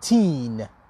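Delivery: put-on thirteen, stress on second syllable teen. Teaching thirteen versus thirty: stress on teen in thirteen. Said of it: "ببین روی تینش استرس میذارم".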